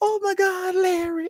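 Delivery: very high, drawn-out, starstruck swooning gush. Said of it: "I be blown away when they be out like".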